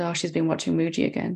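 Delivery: ordinary talk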